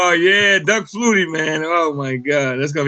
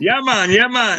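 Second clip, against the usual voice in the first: put-on Jamaican accent, pitched up; 6 semitones higher than usual. Answering a request for an English accent: put-on Jamaican accent. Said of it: "that's Jamaican".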